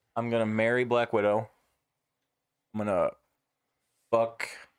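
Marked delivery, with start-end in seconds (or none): 4.1-4.4 heavy, hard emphasis on "fuck". Answering a marry, fuck, kill question: hard emphasis on FUCK. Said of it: "a hard emphasis on the F there".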